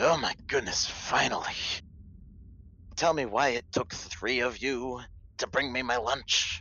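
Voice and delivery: put-on high-pitched elderly man character voice. Narrating the party nearing the stairs' bottom: voicing an old man. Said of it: "you hear him say".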